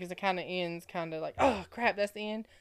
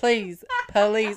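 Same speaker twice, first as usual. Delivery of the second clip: loud, hammy, half-joking mock begging tone; 8 dB louder than usual. Asking listeners to vote for their book: mock begging. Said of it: "I am begging you".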